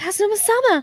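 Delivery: shouting. Calling out a character's name during the game: shouting the name. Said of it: "I shouted that!".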